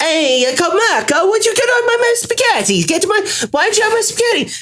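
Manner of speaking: very high, put-on Italian accent. Retelling a street market spaghetti seller calling out: imitating an Italian vendor's accent. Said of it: "his accent wasn't bad".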